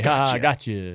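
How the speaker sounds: mock chuckle while talking. Retelling a fake voicemail greeting that fooled callers: imitating someone chuckling. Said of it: "he would chuckle and say".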